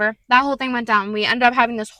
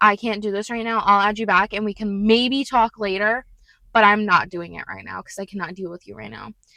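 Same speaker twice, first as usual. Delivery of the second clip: flat, dry, expressionless, dismissive deadpan; 3 semitones lower than usual. Retelling own reply to an ex on the phone: deadpan delivery, retold. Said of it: "And I deadpan went".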